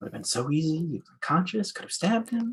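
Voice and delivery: soft muttering under the breath, aside. Following another character while muttering a private thought: muttering under the breath. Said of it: "just under my breath".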